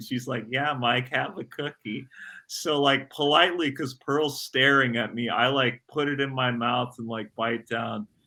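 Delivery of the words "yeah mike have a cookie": acted snickering voice. Retelling how Mom urged eating an old cookie: imitating someone snickering. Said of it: "my mom's, like, snickering".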